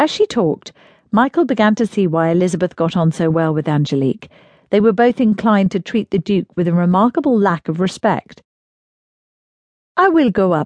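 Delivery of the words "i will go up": put-on firm, lilting French accent. Narrating a novel, voicing Angelique's firm announcement in her lilting French accent. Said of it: "announced firmly in her lilting French accent".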